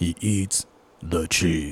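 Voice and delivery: low, hushed, dramatic movie trailer announcer voice. Joining a made-up movie preview with the other speaker, in a movie trailer voice. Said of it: "the movie guy, the one that does like all the previews".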